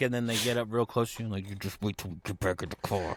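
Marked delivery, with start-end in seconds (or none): 1.5-3.2 put-on hiss through gritted teeth, lower pitch. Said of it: "the gritted teeth talk".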